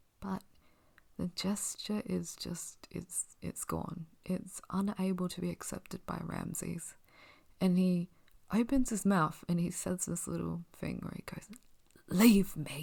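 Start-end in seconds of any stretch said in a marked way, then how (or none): 12.1-12.8 sounding like a smoker. Retelling a character's short line in a scene, sounding like a smoker. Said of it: "I sounded like an, a smoker there".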